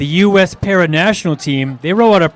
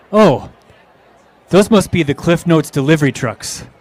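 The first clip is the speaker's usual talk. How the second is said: bone-dry, dead straight deadpan delivery, no laughter. Reminding the listener of their remark while driving past trucks, retelling a deadpan line. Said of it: "you said in a total deadpan delivery".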